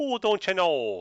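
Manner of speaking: badly done north-central US Minnesota accent. Showing the others a bad north central accent. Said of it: "It's sort of like all".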